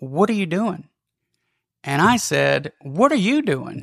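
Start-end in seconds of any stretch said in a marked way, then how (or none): 0.0-0.9 real snarky teacher tone, a bit high. Retelling how a high school teacher confronted the speaker in class: mimicking a snarky tone. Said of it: "said in a real snarky tone".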